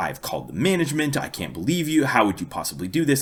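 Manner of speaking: put-on very proper British accent. Quoting a woman's lecture at the speaker, in a very proper British accent. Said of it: "All in a very proper British accent".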